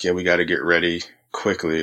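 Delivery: normal talking voice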